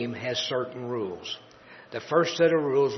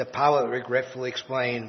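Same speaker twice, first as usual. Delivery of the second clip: plain reading voice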